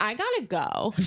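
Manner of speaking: ordinary talk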